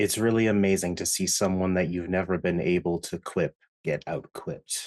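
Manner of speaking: hushed, soft, half-whispered voice. Voicing a character who half-whispers back to another: half-whispering in character. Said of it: "Theo then whispers back".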